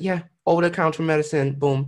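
breezy, offhand voice. Retelling how a nurse gave a positive test result: imitating a casual nurse. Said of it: "how, like, casual she was".

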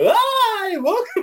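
very high, jittery, nervous voice, "hi" drawn out. Imitating own podcast intro greeting: imitating own nervous greeting. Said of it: "'Cause I get so nervous".

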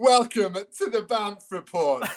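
mock condescending presenter voice. Showing how the podcast opening should sound: put-on condescending presenter voice.

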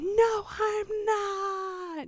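mock very high shriek with long drawn-out not. Retelling her screamed reply: imitating her screaming. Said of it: "And she'll scream".

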